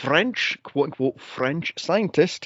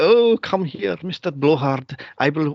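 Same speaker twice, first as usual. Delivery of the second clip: bad, fake, put-on cartoon French accent. Recounting a movie character, speaker imitates her line in a Pepe Le Pew accent. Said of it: "the Pepe Le Pew accent she had".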